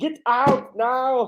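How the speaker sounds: high-pitched sat-nav style voice. Imagining a GPS warning about a bad neighborhood: Arnold Schwarzenegger voice. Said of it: "did the voice for G P S".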